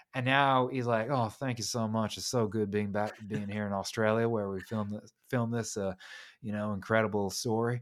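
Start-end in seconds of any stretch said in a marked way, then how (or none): 1.1-7.8 put-on Southern US rock-and-roll crooner accent. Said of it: "maintained this [name] accent".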